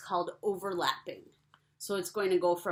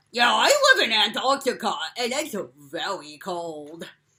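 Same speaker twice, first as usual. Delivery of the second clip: raised puppet-character voice; 9 dB louder than usual. Speaker chats with Petey, who lives in Antarctica, answering as him: Petey voice. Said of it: "so that's how Petey talks".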